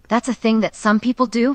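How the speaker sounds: ordinary talk, nothing marked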